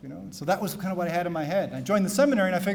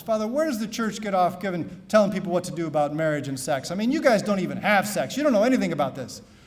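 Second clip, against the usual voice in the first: usual speaking voice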